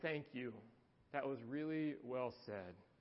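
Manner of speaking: said softly and low under the breath. Retelling what a gentleman said to a dad: imitating someone speaking quietly. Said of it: "he said quietly".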